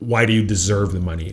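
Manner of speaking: mock drill-sergeant manner and tone. Recalling what they said to the listener in the kitchen, imitating a drill sergeant. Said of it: "in a drill sergeant kind of way".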